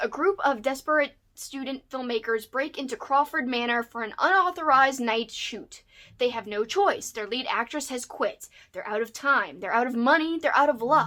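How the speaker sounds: ordinary talk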